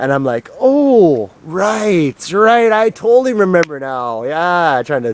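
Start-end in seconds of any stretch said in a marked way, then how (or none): 0.6-4.2 pitched-up, drawn-out, faked, playing-along tone. Retelling how he answered the mother at school: imitating faking that he remembers. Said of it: "trying to fucking fake my".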